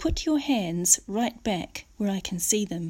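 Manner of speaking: ordinary delivery, nothing marked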